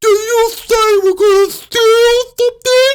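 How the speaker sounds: play-acted, very high, very loud speech with mouth full. Retelling a teacher talking with sandwich in her mouth: imitating talking with a full mouth. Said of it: "she's got sandwich in her mouth".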